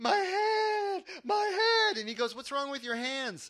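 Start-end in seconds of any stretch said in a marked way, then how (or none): 0.0-2.0 very high, very slow, drawn-out panicked cry, acted. Recounting running up to their brother with bloody hands: retelling a scream. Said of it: "I'm like screaming".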